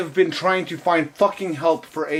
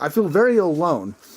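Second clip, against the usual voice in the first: ordinary delivery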